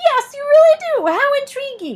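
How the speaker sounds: shrill, squeaky, very high and loud little squeak. Reading a story aloud, the narrator voices Suz speaking up: squeaky voice. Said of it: "said a squeaky voice".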